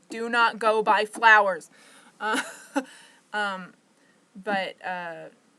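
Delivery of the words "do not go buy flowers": yelling, much louder. Retelling how she yelled at her mom, retelling own yelling. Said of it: "Like I'm yelling at her".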